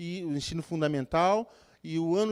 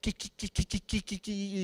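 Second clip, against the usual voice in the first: mock, imitated stutter, quieter; 3 semitones higher, 3 dB quieter than usual. Describing a man greeting people before a service, imitating a stutter. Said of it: "falava assim meio que gaguejando".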